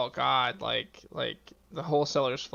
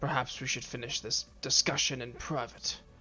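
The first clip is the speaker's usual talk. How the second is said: whispered, much quieter; 4 dB quieter than usual. In a tabletop game, a character whispers to a player's character, whispering. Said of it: "he's going to whisper to you".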